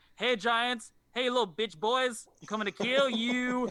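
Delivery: high, brash, boastful taunting battle-cry yell. Retelling how Thor announces himself to the giants: imitating Thor yelling.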